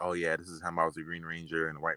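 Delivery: ordinary delivery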